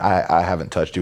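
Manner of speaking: normal talking voice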